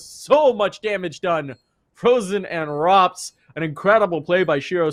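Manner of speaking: high-pitched voice cracking with excitement. Commentating a match as a player makes a big play, voice cracking with excitement. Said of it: "it makes my voice crack".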